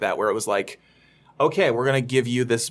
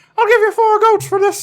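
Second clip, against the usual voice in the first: shrill, very high, loud cartoon raven voice; 8 dB louder than usual. Discussing ravens bartering, the speaker voices a raven: Mickey Mouse-like raven voice. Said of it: "That's my raven voice".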